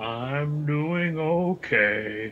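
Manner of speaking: gloomy donkey character voice. Replying when the host asks how everyone is doing, Eeyore voice. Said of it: "In my very best Eeyore voice".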